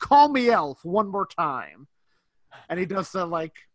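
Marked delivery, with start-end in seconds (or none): 0.0-1.9 play-acted, very loud, sharp, furious snap. Retelling a film scene where Miles snaps at someone: imitating Miles snapping angrily. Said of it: "Miles just snaps at him".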